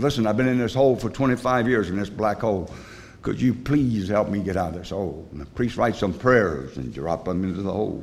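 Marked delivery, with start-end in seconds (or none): none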